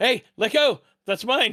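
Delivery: put-on very high, shrill, small-boy yelp and shriek. A small boy shrieks as his wrist is grabbed while taking a pastry: shrieking small boy voice. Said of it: "the voice of a small the small boy like shriek".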